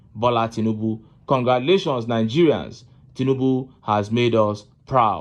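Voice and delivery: ordinary talk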